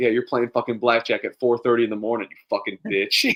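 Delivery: mock angry, pissed-off ranting voice. Retelling a video of a blackjack dealer being chirped in chat: imitating an angry dealer. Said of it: "pissed off".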